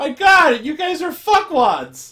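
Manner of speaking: high, loud, smug gotcha exclamation. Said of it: "smugly crouches down a little bit and goes".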